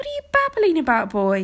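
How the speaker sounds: short sharp snap. Kay snaps at Arthur, who has just burst into his father's chamber. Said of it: "snapped Kay".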